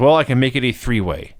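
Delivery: ordinary talk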